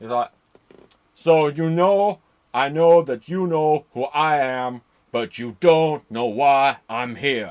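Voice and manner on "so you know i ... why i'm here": booming, slow wrestler promo voice. Retelling a wrestler's ring speech after an interrupted match: Scott Hall impression. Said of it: "gotta do the Scott Hall thing properly".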